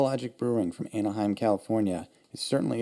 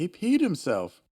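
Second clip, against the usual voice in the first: high, yelled shout; 8 semitones higher than usual. A game narrator voices one of the guards shouting: guard yelling. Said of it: "One of the guards yells".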